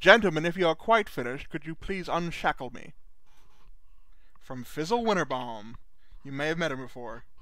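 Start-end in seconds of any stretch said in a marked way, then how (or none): 0.0-2.9 distinguished gentleman voice with gentlemanly poise. A shackled figure in the corner addresses the gentlemen: distinguished Fizzle Winterbaum voice. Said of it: "a distinguished voice from the corner that says".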